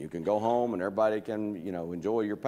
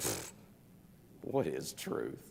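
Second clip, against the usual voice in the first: mock scornful scoff, breathy and half whispered; 8 semitones lower, 10 dB quieter than usual. Picturing Pilate's question in verse thirty-eight: scoffing Pilate. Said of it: "you can almost picture him going".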